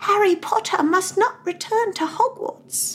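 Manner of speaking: very high, slow, squeaky elf voice. Showing the voice once used when doing the voices, Dobby voice. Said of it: "I did have a good Dobby voice".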